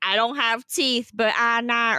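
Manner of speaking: mocking, teasing, poking-fun woman's voice. Mocking a woman from a clip by imitating her words: imitating the woman from the clip. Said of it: "I love how she's like".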